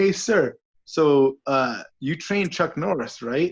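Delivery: loud mock calling. Retelling greeting a stranger waiting at the gym: retelling own loud speech. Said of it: "pretty loudly".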